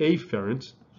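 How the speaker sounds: stress on the initial a of afferent. Telling afferent apart from efferent, with strong emphasis on the A in afferent. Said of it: "emphasizing the A here".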